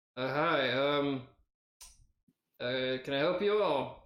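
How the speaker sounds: slow, weary, halting tired voice. Voicing a gift shop clerk greeting the players: tired tiefling man. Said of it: "lifts his head and is like".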